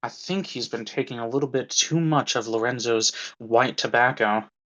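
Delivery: half-whispered, low, aside-like delivery. Voicing a patron half-whispering to another guest: half-whispering patron. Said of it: "whispers to another and is like".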